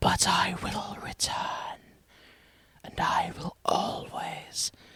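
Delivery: raspy, guttural voice. Narrator reading a character's parting line, rasping gutturally. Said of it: "He rasps gutturally".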